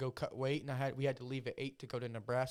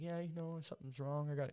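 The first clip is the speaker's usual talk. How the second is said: scared, hushed, barely-there half-whisper; 5 dB quieter than usual. Retelling what a scared opponent said before a fight: imitating someone half-whispering. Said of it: "kinda, like, whispering".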